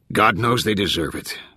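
plain reading voice

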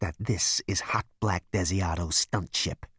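frosty, cold, icy, chilling voice. Narrator voicing a character's retort to another character, in an icy cold voice. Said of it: "in a voice that would make a vegan snow lizard feel chilly".

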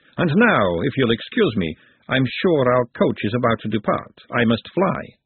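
ordinary delivery, nothing marked

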